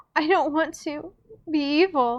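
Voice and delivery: panting through sobs. Sophie, held in Agatha's arms, panting through sobs. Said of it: "Sophie panted through sobs".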